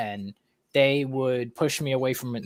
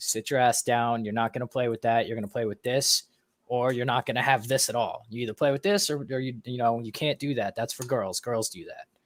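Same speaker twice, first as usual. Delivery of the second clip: put-on stern, aggressive tone; 4 dB quieter than usual. Retelling what the dad would say to the child: imitating dad's stern aggressive tone. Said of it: "that's basically how my dad was".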